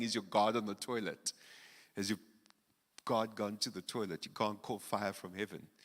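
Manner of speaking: ordinary talk, nothing marked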